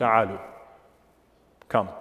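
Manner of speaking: put-on stern tone. Retelling the Prophet calling to men mocking the adhan, retelling a stern command. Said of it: "then in a stern voice".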